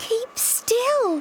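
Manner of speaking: very high, urgent stage whisper. Rebecca speaks to Simone as a huge spider crawls closer, half-whispered. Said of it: "whispered Rebecca".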